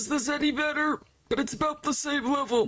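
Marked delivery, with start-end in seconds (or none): 0.0-1.0 put-on really old, elderly-sounding voice. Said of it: "I guess I could do something like this".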